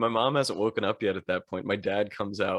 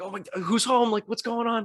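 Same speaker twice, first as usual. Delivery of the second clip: put-on very high, urgent, worried shouting; 13 semitones higher than usual. Running into the house and finding nobody inside: retelling own shouting. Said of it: "I'm like shouting".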